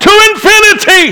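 high-pitched scream. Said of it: "he screamed out in the darkness of the night".

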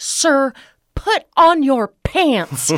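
loud drawn-out high yell. Retelling how a flight attendant yelled at a passenger: imitating a loud yell. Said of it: "yell very loudly".

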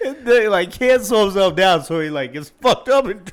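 cracking up mid-sentence, very high and loud. Describing a friend's fall while still laughing: laughing while talking. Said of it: "I see tears in your eyes".

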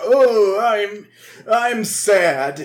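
very slow, with every word drawn out. Retelling an episode, imitating Yugi's grandpa. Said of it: "Yugi's grandpa is all like".

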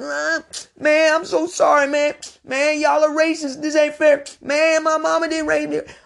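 put-on very high bawling sob, like a baby. Retelling how a friend reacted when they both got caught, imitating someone bawling. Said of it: "starts crying like a baby. I'm talking bawling".

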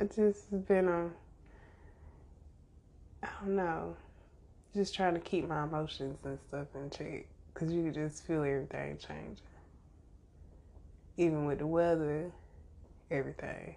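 subdued, sad, somber voice. Welcoming everybody back and explaining feelings about changing seasons: somber voice. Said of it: "If I sound really somber".

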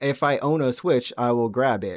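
speaking like a machine, robotic voice. Praising a game's art direction, the speaker says it in a robot voice. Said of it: "Why'd you say it like a robot?".

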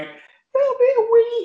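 play-acted, very high, wheezed out through laughter. Retelling how Trav reacted, imitating Trav wheezing with laughter. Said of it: "He was like wheezing".

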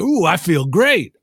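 breezy, offhand, nonchalant, casual delivery. Retelling a movie scene where a revived soldier speaks: imitating a nonchalant tone. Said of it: "very nonchalantly".

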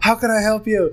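high, eager service worker voice.

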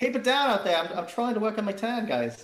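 put-on poorly done Australian accent. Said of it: "Pretty sure it's more Australian".

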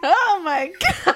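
high, slow, loud, drawn-out shocked exclamation. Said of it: "He goes".

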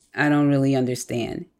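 normal talking voice

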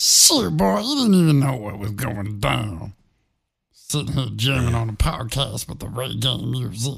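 put-on voice like a drunk chipmunk. On a podcast, a co-host tries out another voice, drunk chipmunk voice. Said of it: "It sounded like a drunk chipmunk".

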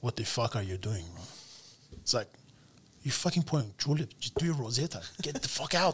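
put-on thick, laid-on Brazilian accent. Speaker quoting a Brazilian man who told them off, thick Brazilian accent. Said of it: "you can imagine the accent thick".

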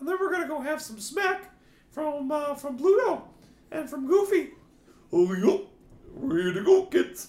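put-on cartoon mouse voice. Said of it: "I love having the voice of Mickey Mouse".

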